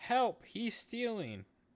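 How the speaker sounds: shrill, very high shout. Pitching a plan, speaker acts out Ari's call to the guards: yelling for help.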